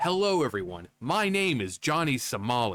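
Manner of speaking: nice, proper, polite delivery. Mimicking how he sounds in his videos, Johnny Somali's mock-proper voice. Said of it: "tries to sound very nice and proper".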